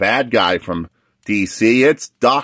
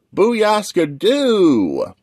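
very high, squeaky, swooping, bouncy cartoon voice; 10 semitones higher than usual. Presenting his action figures one by one, doing his Cyborg impression. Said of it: "That's my Cyborg impression".

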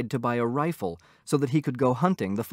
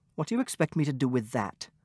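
irritated, annoyed, muttered grumble; 3 dB quieter than usual. A wife tosses her husband's invitation on the table, annoyed mutter. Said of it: "muttered, annoyed".

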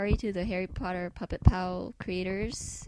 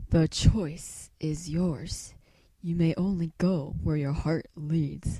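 deep, poetic creature voice; 2 semitones lower, 4 dB louder than usual. Doing a series of Pokemon voices, next up is Lugia, Lugia voice. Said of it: "that makes me feel so deep and poetic".

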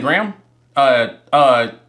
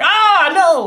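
mock squeaky, very high little sob, crying; 14 semitones higher than usual. Joking that a toothbrush would cry at gray teeth: mock crying toothbrush voice. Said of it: "the toothbrush gonna cry. I'm like".

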